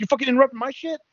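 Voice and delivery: play-acted, very high-pitched, pissed-off outburst. Retelling a backstage interview that was interrupted: imitating pissed-off Punk. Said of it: "Punk's, like, all pissed off".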